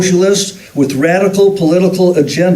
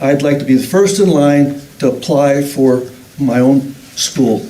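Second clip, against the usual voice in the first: ordinary talk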